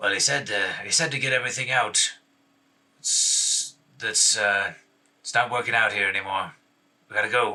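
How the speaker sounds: sour, gruff, surly lowlife bandit voice. Two rough figures trade a terse exchange about being forced to leave a home; speak it in a surly manner. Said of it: "Sounds kind of sad".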